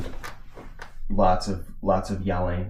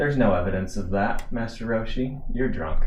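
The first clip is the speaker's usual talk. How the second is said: normal talking voice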